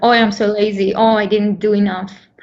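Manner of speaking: usual speaking voice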